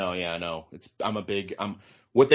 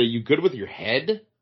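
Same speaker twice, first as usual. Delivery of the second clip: normal talking voice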